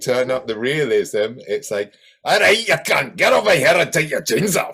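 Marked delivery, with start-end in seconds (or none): 2.2-4.7 put-on Scottish-accented robot voice, loud, high. Imitating a robot at its maximum realism setting: scottish accent. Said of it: "she speaks in a Scottish accent".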